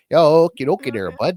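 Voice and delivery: put-on Canadian accent, loud, high. Showing which accents can be done: stereotypical Canadian accent. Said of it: "I can do Canadian".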